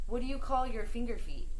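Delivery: normal talking voice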